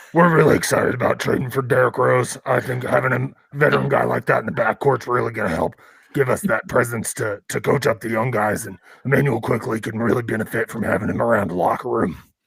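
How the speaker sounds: rough, heavy, raspy, gravelly voice. Imitating a man whose voice the friends compare to Batman's, in a raspy smoker's voice. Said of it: "kinda sounded like Doc after he smoked, like, ten cigars".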